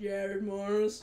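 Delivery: really bad put-on deep voice. Try out a voice for Sonia although you can't do deep voices, a really bad impression. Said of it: "That was a really bad impression".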